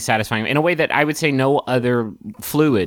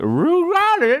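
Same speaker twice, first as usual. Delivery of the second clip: very high put-on dog voice, roar drawn out. Retelling what they said while biting Raul in the game: dog voice. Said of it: "in my dog voice".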